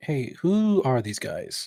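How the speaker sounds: hushed, sidelong mutter under the breath. A player's character approaches the shopkeeper, under his breath. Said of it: "just like under his breath be like".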